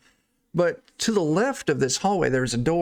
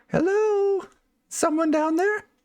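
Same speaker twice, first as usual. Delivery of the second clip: very high-pitched, feminine put-on lady voice. During a tabletop game scene, a player voices a character; lady voice. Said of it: "That's my lady voice".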